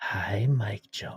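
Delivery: super sexy, seductive, sultry voice. Teasing another speaker by copying how they greet a viewer: imitating a super sexy voice. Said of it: "you normally do, like, a, a super sexy voice".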